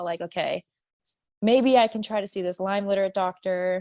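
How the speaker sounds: normal talking voice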